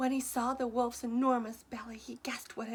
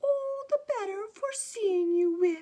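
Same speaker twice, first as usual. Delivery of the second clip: high, raised, wavering, quavering, wobbly voice; 9 semitones higher, 8 dB louder than usual. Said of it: "the wolf replied in a wobbly voice".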